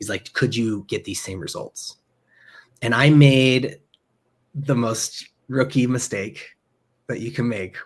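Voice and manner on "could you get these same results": put-on conspiratorial aside, lower and quieter. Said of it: "almost conspiratorially".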